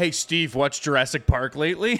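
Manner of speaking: imitated sarcastic, taunting tone. Retelling how a former bully taunted someone: imitating a sarcastic taunt.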